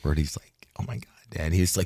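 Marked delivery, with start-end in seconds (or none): 0.8-1.5 mock totally freaked-out, panicked outburst. Retelling a son's phone call after he saw the film: imitating someone freaked out. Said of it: "totally freaked out".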